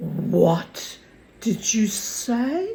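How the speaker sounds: slow, hushed, held-breath tone. Narrating Mister Kraleski asking the narrator to repeat, in a hushed voice. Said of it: "he asked in a hushed voice".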